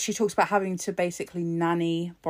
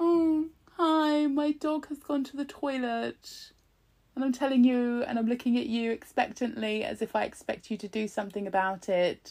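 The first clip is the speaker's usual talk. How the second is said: mocking, scornful, high babyish man voice; 6 semitones higher than usual. Retelling what the pm said about his dog: mocking man-baby imitation. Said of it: "this fucking man baby is like".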